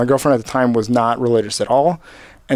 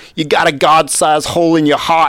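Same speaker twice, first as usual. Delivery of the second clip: imitated New York accent; 4 semitones higher than usual. Quoting a man talking to some kids, in an imitated New York accent. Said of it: "I'm going to try to imitate the New York accent".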